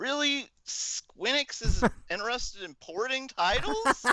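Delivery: very high, loud, sarcastic feigned shock. Reacting to a news headline about porting titles: sarcastic mock surprise. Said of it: "we were being sarcastic".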